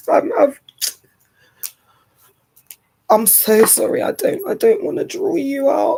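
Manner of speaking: high, tearful voice, choking up, fighting back tears. Apologizing to the other speaker while trying to hold back tears, crying. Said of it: "I was really trying to hold this".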